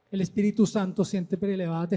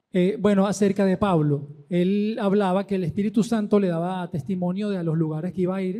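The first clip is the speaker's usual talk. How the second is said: louder, projected speaking voice. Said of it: "no, te oigo hablar nada más".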